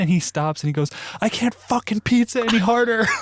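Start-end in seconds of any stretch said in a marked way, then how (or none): 1.2-3.0 put-on very high, angry, snapping outburst. Retelling how Steve stopped after being yelled at: imitating Steve snapping. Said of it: "push him until he snaps".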